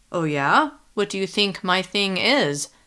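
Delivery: plain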